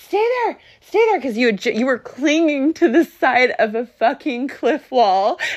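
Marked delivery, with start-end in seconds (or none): 0.0-1.2 scream, much higher and faster. Parent retells what they screamed at the listener during a rescue, retelling a scream. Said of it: "and I'm screaming at you".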